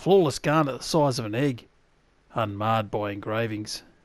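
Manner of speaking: put-on Australian accent. Reading out a game item's description in a fake Australian accent. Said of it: "That's the Australian accent you hear".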